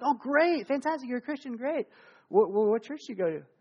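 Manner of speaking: mock high, eager, overly familiar friendly gush. Retelling own reply to a hospital volunteer: retelling overly familiar friendliness. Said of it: "heighten the whole, you know, familiarity".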